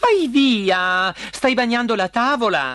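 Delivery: abrupt, high, blurted outburst with "via" drawn out. Reading the princess's line to the frog on the table, bursting out. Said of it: "sbottò la principessa".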